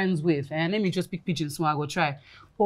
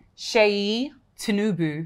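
British-accented pronunciation. Repeating a name after a teacher, in a British accent. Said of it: "you're using British accent".

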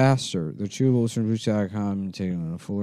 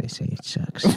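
whisper, much quieter. Talking behind another person's back so he can't hear, whispering. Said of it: "I'm whispering".

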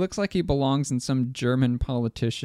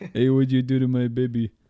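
put-on old Italian mafia man voice and accent; 3 dB louder than usual. Looking at a painting of a baby, speaker gives it a voice: old Italian mafia man voice. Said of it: "looks like an old Italian mafia man".

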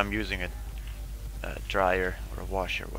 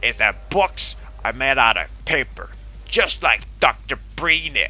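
throat-straining put-on voice, higher and louder; 5 semitones higher, 7 dB louder than usual. Hosting a mock news bit, throat-straining put-on voice. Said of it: "This voice is killing my throat".

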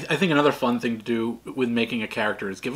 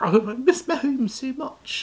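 put-on voice, much higher pitched; 13 semitones higher than usual. Speaker describing Bilbo acts him out; mock-homesick Bilbo voice. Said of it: "I don't know where that fucking voice came from".

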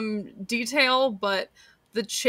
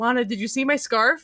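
put-on earnest voice. Quoting a favorite line from the episode: earnest Archer voice. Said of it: "so earnestly".

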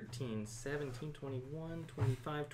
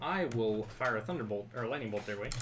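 ordinary delivery

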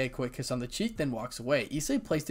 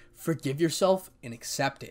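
plain reading voice

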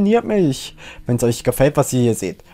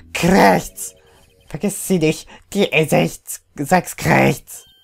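squawky talking parrot voice. In a game scene, the parrot Polly speaks up: Polly the parrot voice. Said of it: "Wow, was für ein erstaunlicher Papagei".

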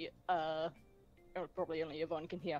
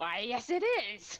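put-on gleeful delight, much higher pitch, slower pace; 6 semitones higher, 4 dB louder than usual. Retelling a little figure's reply when asked if it talks, mock-delighted. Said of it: "He seems to take some delight in that and goes".

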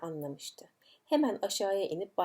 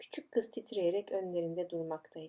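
usual speaking voice

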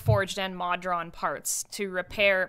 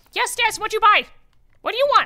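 very high, very loud lizard-dog kobold creature voice; 13 semitones higher, 9 dB louder than usual. Voicing a small kobold stall keeper greeting customers: kobold shopkeeper voice. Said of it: "the person running the stall is a kobold".

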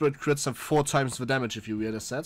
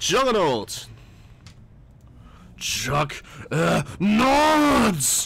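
put-on warrior battle cry, higher pitch; 4 semitones higher, 3 dB louder than usual. Picking a hero and imitating its voice line: imitating the Juggernaut hero shout. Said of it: "I should really work with my impression".

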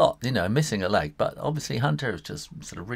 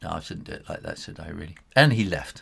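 usual speaking voice

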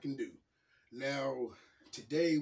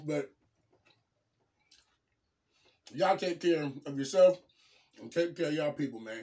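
speaking with food in mouth; 5 dB louder than usual. Signing off to the audience, talking with food in mouth. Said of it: "Sorry I got food in my mouth".

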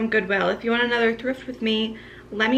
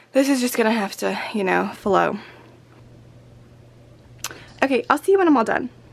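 out of breath, winded; 3 dB louder than usual. Finishing her school morning routine video after putting on shoes, out of breath. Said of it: "I'm out of breath from putting on my shoes".

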